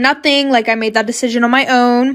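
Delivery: ordinary talk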